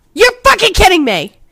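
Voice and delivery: shrill, very loud, high-pitched yelling. Reacting to bad news about the park plans, yelling. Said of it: "I apologize for my yelling".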